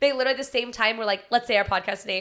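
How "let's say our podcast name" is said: usual speaking voice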